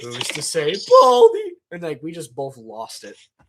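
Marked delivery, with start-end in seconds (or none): 0.9-1.5 voice breaks into very high yelp. Recounting a video recording blooper, he repeats the line, retelling a voice crack. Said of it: "had a voice crack on Principal".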